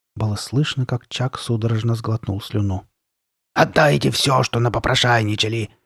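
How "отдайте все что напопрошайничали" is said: vicious, snarling growl. Narrating a girl demanding something from the boys, vicious growl. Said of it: "рыкнула Карли Бет".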